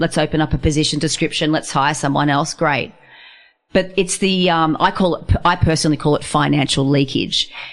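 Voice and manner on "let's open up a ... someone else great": ordinary talk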